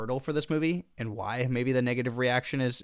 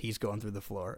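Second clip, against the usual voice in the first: mumbled under breath, much quieter; 3 semitones lower, 7 dB quieter than usual. Recalling what he muttered the second that dude got picked up, mumbling under breath. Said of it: "I mumbled under my breath".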